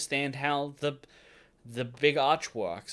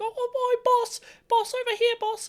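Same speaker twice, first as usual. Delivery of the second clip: put-on grot creature voice, much higher. A speaker recalling how the audiobook narrator used to voice Nizquick: Nizquick's voice. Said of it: "Nizquick's voice stopped being like".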